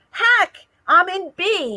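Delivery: high, stretched-out, drawn-out yell. Retelling calling out to a late friend while boarding: imitating own past screaming. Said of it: "and I'm screaming".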